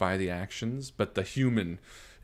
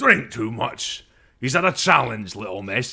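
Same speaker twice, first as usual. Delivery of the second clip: booming, loud dwarf voice; 3 semitones higher, 3 dB louder than usual. Voicing a dwarf who turns from another table to challenge Brea: loud dwarven voice. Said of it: "A loud dwarven voice says".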